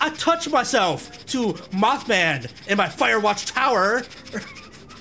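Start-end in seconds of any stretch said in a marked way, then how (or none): 0.0-4.0 strange put-on delivery, high and slow. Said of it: "Why did I say it like that?".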